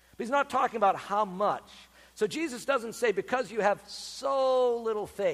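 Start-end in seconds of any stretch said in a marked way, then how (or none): 3.9-4.8 heavy stress landing on the word "so". Speaker illustrates a wording Jesus doesn't use, with emphasis on 'so'. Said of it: "with an emphasis on the word so".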